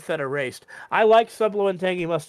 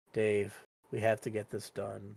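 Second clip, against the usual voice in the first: downcast, depressed voice, very quiet; 9 semitones lower, 13 dB quieter than usual. Describing how another voice actor sounds as a character, depressed Zooble voice. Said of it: "it's just her depressed".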